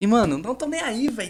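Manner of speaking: blasting shout, high and loud.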